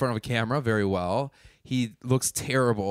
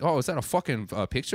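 put-on New Zealand accent drifting toward South African. Recounting what the New Zealander at the table would say, imitating Jordan's New Zealand accent. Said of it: "New Zealand Jordan ... I can't do the accent".

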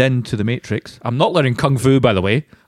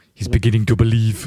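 put-on Nigerian accent; 2 semitones lower than usual. Quoting a movie line after a character voice was mocked: Nigerian accent. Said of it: "Why have you made him Nigerian?".

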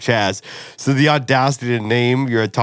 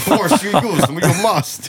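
put-on small, squeezed-up, high babyish creature voice; 8 semitones higher than usual. Joking about time travel, acting out Baby Yoda appearing: Baby Yoda voice. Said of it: "Baby Yoda shows up".

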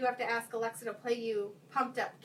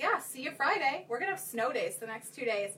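put-on cheeky, sassy, know-it-all little kid voice. Retelling what a six-year-old told her teacher: imitating a sassy child. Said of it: "she was sassy enough to even say that".

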